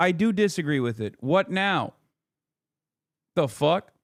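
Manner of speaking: ordinary talk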